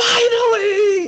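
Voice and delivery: shrill, very high, loud scream. Retelling a husband reacting to the TV reunion: imitating husband screaming. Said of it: "my husband was screaming at the T V".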